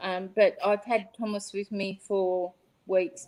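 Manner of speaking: ordinary talk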